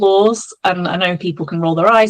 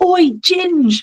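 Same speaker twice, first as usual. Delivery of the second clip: mock shout, very high pitched; 11 semitones higher than usual. Retelling a wanted man on a roof calling out: imitating someone shouting. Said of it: "he shouts at me".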